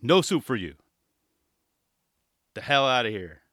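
mock deadpan, dead dry delivery without laughing. Acting out a soup seller refusing a customer: mock deadpan delivery.

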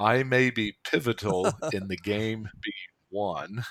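very slow, deliberate, spelled-out delivery. Repeating the previous sentence a second time, said slowly. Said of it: "I'll say that again real slow".

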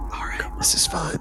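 soft, hushed whisper. Podcast host speaking to the others after a show promo, whispering. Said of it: "Why are we whispering?".

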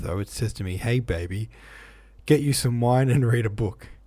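ordinary delivery

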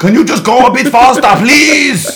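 very high-pitched scream at full volume. Imagining yelling at a self-driving cab: imitating Arnold Schwarzenegger screaming. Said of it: "screaming at my Johnny Cab".

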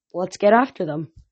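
plain

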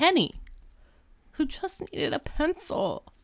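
hushed, swooping, theatrical dramatic narration. Recapping a detention scene to a listener, in a put-on dramatic voice. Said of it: "Was that your dramatic voice?".

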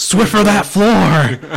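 play-acted high yelling, word "floor" stretched. Joining the bit of a mom yelling orders: imitating a mom yelling. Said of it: "it sounds like your mom's yelling at you".

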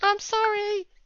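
cringing, cowering, apologetic tone in a very high voice. Retelling a friend cowering after a scolding: imitating Jansen cowering. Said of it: "Jansen cowering in the corner going".

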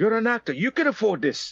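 imitated South African accent. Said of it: "with a South African accent".

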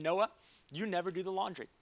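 put-on gentle, sweet Southern accent with a stern edge. Retelling being sat down by a wife: imitating a sweet Southern accent, a little stern. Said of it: "in her sweet Southern accent, but a little stern that day".

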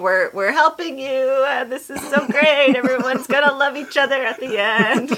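high, sugary, falsely cheerful. Acting out how the Sunshiners might sound: falsely cheery. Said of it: "falsely cheery".

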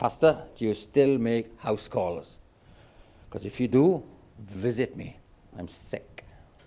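gruff, rough-edged voice. Retelling a man phoning the pastor to ask for a house call: Arthur Forbes's gruff voice. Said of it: "in a gruff voice said".

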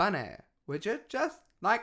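put-on California valley girl voice. Imitating how women used to talk, the speaker lands on a California 90s valley girl voice. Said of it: "That's like California 90s".

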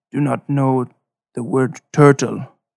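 terse, clipped put-on guard voice, broken phrasing. In a tabletop game, the player voices a wary guard character: terse, broken phrasing.

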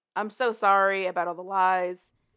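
plain

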